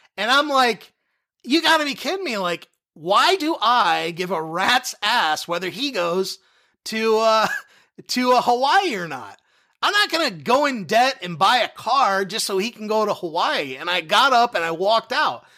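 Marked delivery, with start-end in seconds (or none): none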